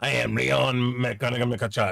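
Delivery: mock fear-inspiring menacing voice. Imitating someone whose name makes people melt in fear: menacing introduction. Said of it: "he says that and people just, like, melt in fear".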